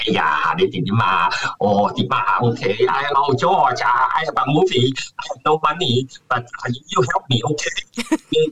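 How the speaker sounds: slow pace, switching between Cantonese and English. Imitating James Hong asking for help with his movie: James Hong impression. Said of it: "he likes to talk like a Chinese man".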